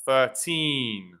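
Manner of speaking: put-on thirteen with stress on the second syllable, -teen. Explaining stress in numbers thirteen to nineteen, thirteen stressed on second syllable teen. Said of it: "you put the stress in the second syllable".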